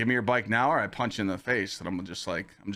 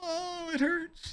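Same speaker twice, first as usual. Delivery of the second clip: mock, hammed-up exaggerated pain, pitched very high; 4 dB quieter than usual. Retelling playing up the injury during an apology: mock exaggerated pain. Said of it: "making it look bad".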